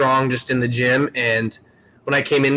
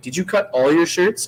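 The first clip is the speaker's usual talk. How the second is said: stern, disapproving tone; 4 semitones higher than usual. Speaker retelling an official questioning her after the event, mimicking a stern voice. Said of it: "kind of said it in like a stern voice".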